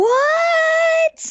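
high, mock shocked gasp.

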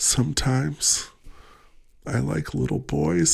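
soft, subdued, quiet, slow murmur. Retelling a movie scene, the other man answering: imitating a man speaking quietly. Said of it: "the guy's all real quiet".

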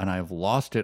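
plain

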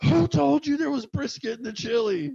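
put-on angry, very high-pitched mad shout. Retelling how the cook answered the mom's order: imitating a cook yelling. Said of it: "And he's yelling this to your mom".

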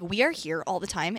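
dead serious, low voice. Retelling a friend's complaint about a waitress: imitating a friend, dead serious. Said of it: "he was so dead ass".

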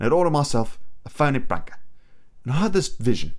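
bad put-on British film-star accent. Quoting a monologue as a Michael Caine impression. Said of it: "That's my terrible Michael Caine impression".

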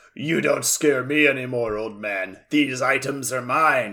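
put-on deep voice. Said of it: "in the deep voice".

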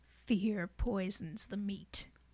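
hushed, very quiet, chilling, sinister, menacing voice. Retelling a creepy man's words about killing an animal, in the scariest voice possible. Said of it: "Said in the scariest voice possible".

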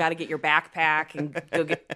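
native, everyday Chicago Midwestern accent. Describing the accent lost at theater school, demonstrating a Chicago accent. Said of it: "that's how I sound".

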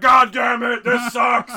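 loud, furious, angry blurted outburst. Retelling a character's reaction to a disappointing gift: imitating someone angry. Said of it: "he was so mad".

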